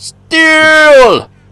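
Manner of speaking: high, loud, steely yell. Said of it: "Why are we yelling steel?".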